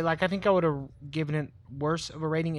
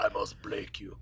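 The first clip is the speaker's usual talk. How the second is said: breathy, whispered delivery; 9 semitones lower, 8 dB quieter than usual. Quoting a favorite movie villain's line: Ivan Drago voice. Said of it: "Ivan Drago".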